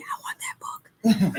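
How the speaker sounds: slow, soft whisper under the breath. Retelling what the mom is saying beside the speaker: imitating someone whispering. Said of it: "She's over here whispering to me".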